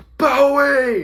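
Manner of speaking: screamed out high and loud.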